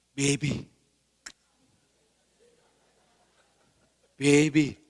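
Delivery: acted, R-rated, lustful, seductive voice full of desire. Retelling a husband's R-rated words to his wife, mock-lustful tone. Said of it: "Ngomongnya bukan biasa saja. Ini ngomongnya sudah R-rated, penuh nafsu".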